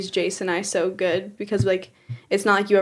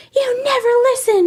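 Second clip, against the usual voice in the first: put-on woman's yell, higher and louder; 7 dB louder than usual. Retelling a lady at Walmart yelling at her two-year-old: imitating a lady yelling. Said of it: "lady yelling at her".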